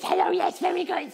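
very high, rasping, creaky little creature voice. Showing how a role-playing kobold character talked, in a kobold character voice. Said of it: "he talked like this".

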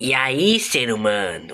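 odd, otherworldly put-on alien voice. Teaching someone how to imitate an alien voice, in an alien voice. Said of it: "eu vou te ensinar a imitar a voz de alienígena".

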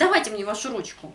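rude, bossy, curt, demanding tone. Showing how an imperfective verb request can sound rude, curt demanding tone. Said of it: "자칫 이렇게 억양이 들릴 수도 있어요".

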